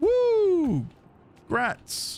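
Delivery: very high, drawn-out, patronizing condescending cheer. Reacting to a completed guild mission target, condescending congratulations. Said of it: "It does sound condescending though".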